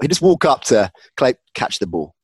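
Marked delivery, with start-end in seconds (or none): 1.5-2.1 calm, soft, quiet delivery. Imitating a coach telling a player to catch the ball: calm Mike Tomlin voice, not raised. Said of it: "without an-, any need at all to raise his voice".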